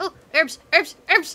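put-on loud, high commercial announcer voice. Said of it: "that was a Pearl reference".

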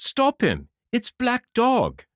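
loud, very high, rising cry. Recognizing the hurrying man, the narrator cries out for someone to stop him. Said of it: "I cried".

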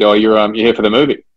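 put-on casual, easygoing Scottish accent. Retelling what two men at a rugby ground said: imitating a Scottish accent. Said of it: "saying in their Scottish, Scottish accent".

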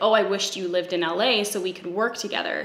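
normal talking voice

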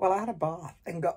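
voice repeatedly cracking and breaking up. Narrating their day out loud, voice breaking. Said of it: "Why does my voice keep breaking?".

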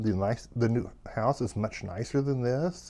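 ordinary talk

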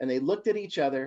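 plain reading voice

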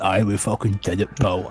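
acted smug little sidekick character voice. Retelling the ending scene where Sam looks at Frodo: imitating Sam. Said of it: "Sam's looking at him going".

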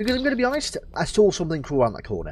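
ordinary delivery

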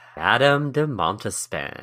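sultry, seductive, sexy delivery. Answering the podcast co-host's question, with a sexy delivery. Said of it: "Like you put some sexy in it".

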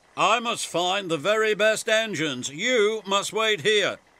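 self-important, grandly puffed, pompous. Narrator reads Sir Handel the engine telling others to wait, puffed grandly. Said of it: "he puffed grandly".

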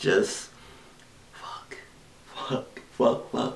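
soft, scared, frightened whisper.

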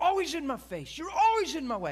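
very high, very loud, shrill, full-blast screaming. Speaker reenacting screaming at their Bible at nineteen, retelling a loud scream. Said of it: "Loud screaming".

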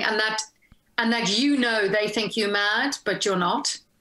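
ordinary talk, nothing marked

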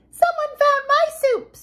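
very high, squeaky, sputtering voice. Baby Bear finds her soup bowl emptied, in Baby Bear's high squeaky voice. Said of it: "sputtered Baby Bear in her high squeaky voice".

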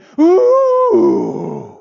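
high, loud, shocked ooh from a group.

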